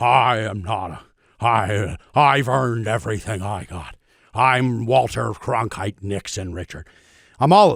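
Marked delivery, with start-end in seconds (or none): 0.0-6.9 put-on grumbly old-man voice. Showing the voice every grumbly old man turns into: Nixon voice. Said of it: "grumbly old man".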